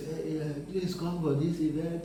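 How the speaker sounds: timid, soft bedroom voice, unconvincing, lacking boldness. Coaching how to record an event invitation video, showing a bedroom voice, no boldness. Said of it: "not a bedroom voice".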